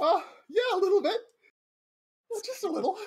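very high-pitched, winded and out of breath. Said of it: "you sound like you're out of breath there".

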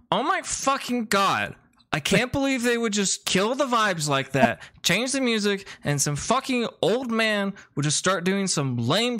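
very high, exasperated, irritated complaining rant. Game master voicing someone who enters the bar, in an irritated voice.

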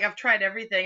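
ordinary talk, nothing marked

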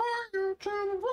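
mock dog voice, high. Speaking for the dog Callie to YouTube viewers, worst dog impression ever. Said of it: "That was the worst dog impression ever".

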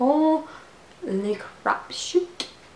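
slow, hushed, excited and awestruck gasp.

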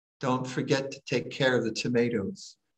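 hushed, very soft, barely audible words. Recounting a dream where the dying mother calls them over, imitating her speaking very softly. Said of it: "she says to me very softly".

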